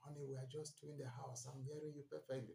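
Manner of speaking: soft, hushed half-whisper under the breath. Retelling words said to a wife who shouts: retelling own half-whisper. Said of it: "Then I'll whisper to her".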